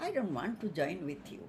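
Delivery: plain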